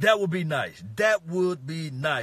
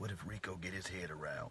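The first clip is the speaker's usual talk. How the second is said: barely-there, very quiet half-whisper; 8 semitones lower, 17 dB quieter than usual. Naming young receivers, then half-whispering a hopeful question: half-whispering. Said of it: "I'm gonna whisper a little bit".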